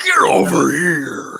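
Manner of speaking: rough, creaky, raspy, high-pitched voice. Showing how the Scorpion line should sound: Scorpion voice. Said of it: "my Scorpion impression".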